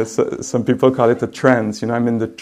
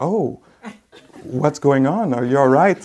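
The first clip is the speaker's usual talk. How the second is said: sweet, caring, concerned voice, higher; 3 semitones higher than usual. Retelling how the teacher reacted after a fall: imitating a caring teacher's concern. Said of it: "very sweet, very, uh, uh, caring".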